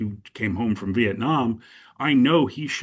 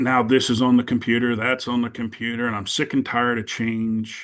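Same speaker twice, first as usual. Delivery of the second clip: plain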